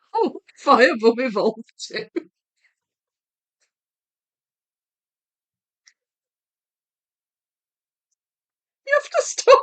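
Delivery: words breaking up, swooping, through laughter. Joking about a Pokemon name while doing a puzzle, laughing while talking. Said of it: "This is making me laugh so hard".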